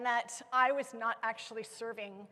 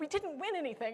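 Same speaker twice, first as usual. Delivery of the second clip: put-on stubborn, outspoken kid, flat and plain delivery; 4 semitones higher, 3 dB quieter than usual. Retelling a son refusing his Little League trophy: imitating a loud statement. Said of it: "he said this really loudly".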